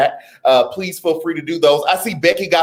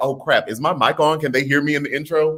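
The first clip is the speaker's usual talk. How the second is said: ordinary talk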